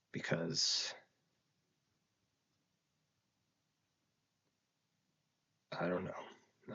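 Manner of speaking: very slow, halting, words failing, overcome with emotion. The speaker, losing their words, explains a decision; emotional, struggling for words. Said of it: "It's hitting me a lot harder".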